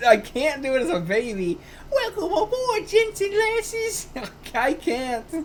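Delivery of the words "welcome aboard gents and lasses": put-on very high-pitched elderly British man voice. Speaker asked for a baby british voice, instead doing an old british man voice. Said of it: "I can only do it as like an old man".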